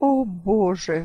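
groaned exclamation. A man hears the narrator's news and groans. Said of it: "простонал он".

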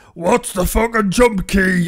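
put-on deep dinosaur voice. Game reviewer suggesting sassy things to say while playing: dinosaur voice. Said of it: "in a dinosaur voice".

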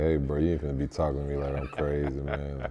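ordinary talk, nothing marked

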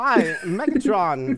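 put-on halting, hesitant actor voice. Joking how a Christopher Walken sound-alike would voice the line: Christopher Walken impression. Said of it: "a Christopher Walken impression".

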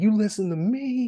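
put-on screaming at a high pitch. Retelling how a crossing guard yelled at a driver's window, retelling a scream. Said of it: "he's like screaming at her window".

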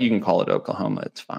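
fast, soft, condescending and dismissive. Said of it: "stop being so condescending".

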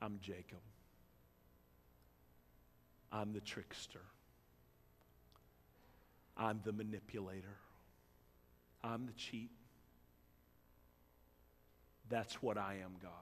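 very quiet, hushed, barely audible whisper. Voicing a man confessing his name to God: acting out a whispered confession. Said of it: "And he whispers it".

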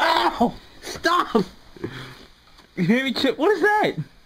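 high, loud startled yelp.

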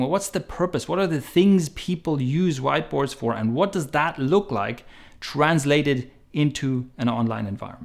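ordinary talk, nothing marked

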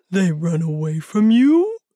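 astonished, surprised voice with rising tune. Narrator reading Tami Bear's reply to Arthur the fox, surprised.

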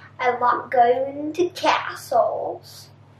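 homemade, put-on Scottish accent. A speaker chatting casually, slipping into a Scottish accent. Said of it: "That's my Scottish voice".

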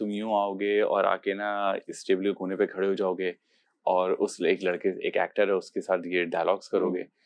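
usual speaking voice

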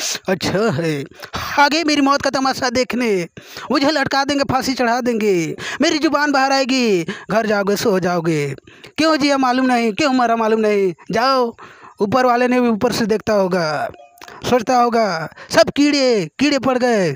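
forceful, loud, high. Urged to speak with force, the speaker performs: forceful Nana Patekar impression. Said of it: "Nana Patekar थोड़ा जोर लगा के बोलना पड़ता".

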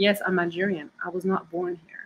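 ordinary talk

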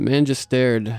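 ordinary delivery

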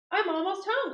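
thrilled, excited exclamation, very high pitched. Narrator reading a children's story, the greedy bee nearly home: excited. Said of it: "cried the greedy bee excitedly".

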